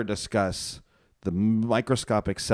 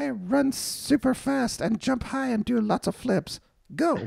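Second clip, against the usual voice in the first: put-on voice, very high, slow, rasping, creaky. Joking about never doing a midi-chlorian impression: midi-chlorians talking to a Jedi. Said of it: "an impression of what the midi-chlorians sound like talking to Jedi".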